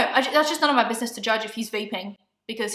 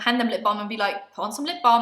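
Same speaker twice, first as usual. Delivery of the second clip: plain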